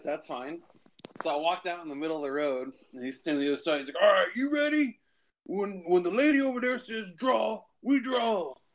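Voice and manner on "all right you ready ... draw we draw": put-on play-acted, very high, slow, slurring drunk voice. Recounting a drunk man calling the start of a duel, imitating a drunk man. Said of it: "he's so drunk".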